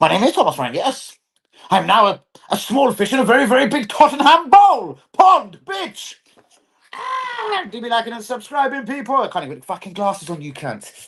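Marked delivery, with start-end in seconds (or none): 0.0-6.2 put-on German accent, pitched higher. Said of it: "a German voice or a German with a bit of Brentford".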